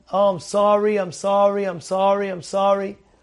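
put-on tearful voice. Retelling someone apologizing to coworkers on the phone: imitating a crying apology. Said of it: "he was crying like a baby".

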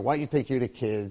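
ordinary talk

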